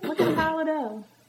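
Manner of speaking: Southern-accented speech. Speaker whose own accent slips out mid-conversation, real southern accent. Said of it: "That sounded real southern".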